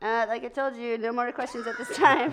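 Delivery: aloof, dismissive, coolly busy dog character voice. Talking for the pet dog Barb, answering an interviewer: voicing the dog Barb. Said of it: "she talks like this".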